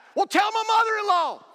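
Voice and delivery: very high, loud, shrill yell. Retelling a joke where the heckler yells back: retelling a yell. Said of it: "the same voice yelled back".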